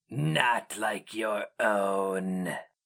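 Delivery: icy, very slow, inhuman creature rasp, dragged out. Narrator reads the creature looming over the hero mage, Inkoroi's rasping inhuman voice. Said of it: "The glistening [name] rasped, speaking an archaic intonation of Hirimsu, his inhuman voice falling like a flake of ice upon sweaty skin. / He had stepped into [name]'s blind flank and now loomed over".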